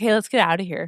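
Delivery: ordinary talk, nothing marked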